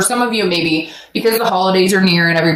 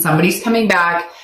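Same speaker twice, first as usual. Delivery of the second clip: usual speaking voice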